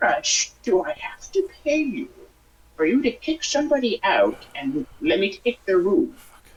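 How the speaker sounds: conspiratorial stage whisper. Leaning close to the man who said the rooms are full, whispering. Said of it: "I kind of like whisper this to him".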